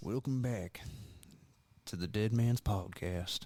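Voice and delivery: soft put-on cowboy-style voice. Podcast co-host, asked to do the cowboy voice, welcomes listeners back: cowboy voice. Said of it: "do the cowboy voice".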